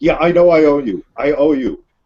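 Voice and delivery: yelling, shouted delivery. A player's character yells at his phone after agreeing to drive, yelling. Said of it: "yells at his phone".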